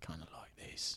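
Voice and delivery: very quiet, breathy, close-to-mic whisper. Trying out a Jason Statham impression: whispered Jason Statham voice. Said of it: "whisper it a little bit".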